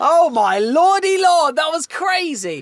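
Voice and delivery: high, slow, drawn-out dramatic wail.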